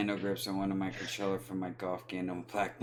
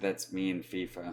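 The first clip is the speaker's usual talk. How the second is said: plain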